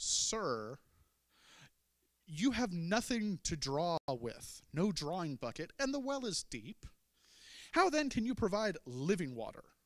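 mock, put-on sarcastic tone laid on heavily. Reading a woman's reply to Jesus aloud: acting out sarcastic reply. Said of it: "I'd love to hear the sarcasm".

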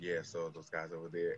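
very quiet, hushed half-whisper, barely audible. Retelling a film scene where a character half-whispers: imitating someone half-whispering. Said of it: "Leo starts whispering".

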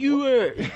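put-on high, dragged Baltimore street accent. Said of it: "I don't talk like that".

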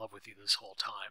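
ordinary delivery

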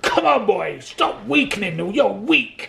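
put-on hard-driving, gruff, slow Scottish accent. Retelling how he was driven on in a warehouse, gruff Scottish accent. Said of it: "that really gruff Scottish accent of his".

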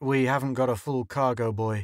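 ordinary delivery, nothing marked

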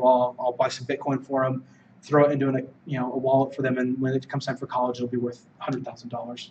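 ordinary talk

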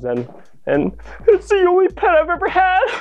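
very high, tearful, swooping sobbing. Speaker presents the robotic puppy they built: crying.

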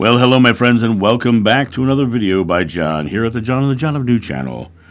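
put-on radio announcer voice. A youtuber greets viewers at the start of a video in a radio voice. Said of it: "doing my radio voice this morning".

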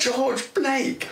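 shrill, high-pitched exclamation. Retelling how a woman stopped in the road and called out a name: loud voice. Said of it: "said in a loud voice".

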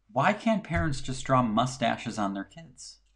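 ordinary talk

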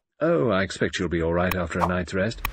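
ordinary talk

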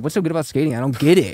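put-on cross, disgruntled, angry, indignant tone. Retelling what an angry stranger on a subway said: imitating someone angry. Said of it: "He was angry".

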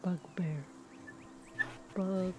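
very soft whisper, repeated. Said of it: "whispering bugbear to herself over and over".

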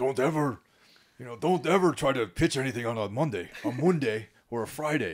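put-on Scottish accent. Retelling pitching advice from a Scottish guy at The Guardian, in a Scottish accent. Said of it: "in that like fucked up accent that they have".

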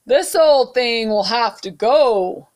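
big, loud, booming voice. As a hand lifts the frog's bucket, someone speaks in a big booming voice. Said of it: "a big voice boom".

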